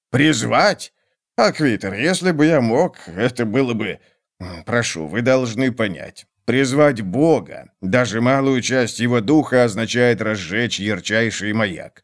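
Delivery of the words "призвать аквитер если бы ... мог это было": usual speaking voice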